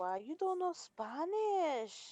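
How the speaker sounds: high, put-on Spanish accent, drawn out. Retelling what people say when the speaker doesn't understand Spanish: imitating a Spanish accent. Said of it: "That exact accent".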